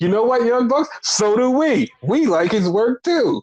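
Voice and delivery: teasing tongue-in-cheek tone. Retelling what friends jokingly said, retelling a joking jab. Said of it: "jokingly took that and".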